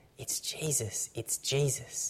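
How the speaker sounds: very slow, hushed whisper under the breath. Retelling a woman's reaction as a story is told, imitating an under-breath mutter, growing louder. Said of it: "kept saying under her breath, but louder and louder".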